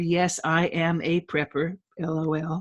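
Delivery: normal talking voice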